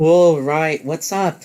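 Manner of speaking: put-on Canadian-accented voice. A narrator voices a Canadian woman greeting the player, Canadian accent. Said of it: "in her normal Canadian accent".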